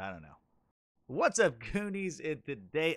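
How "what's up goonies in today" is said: very soft, hushed, giggly, cracking up, pitched up. Greeting stream viewers after stumbling over the game's name, cracking up laughing. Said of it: "I'm cracking up".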